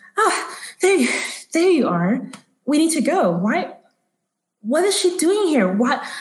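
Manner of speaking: woman's voice, high and slow.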